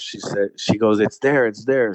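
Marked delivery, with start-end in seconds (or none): 1.0-1.9 mock screaming delivered at half strength. Retelling how a companion reacted after seeing an animal: imitating someone screaming. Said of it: "She's screaming".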